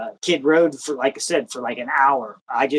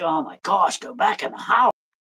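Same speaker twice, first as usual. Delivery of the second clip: put-on lady voice, light, mild, high-pitched yell; 5 semitones higher than usual. Retelling a yell at dusk while hunting: imitating someone yelling. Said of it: "yelling, like".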